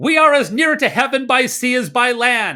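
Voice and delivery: acted high-pitched shout. Retelling Humphrey Gilbert waving from the ship's stern, Humphrey Gilbert shouting. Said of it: "he waves and shouts".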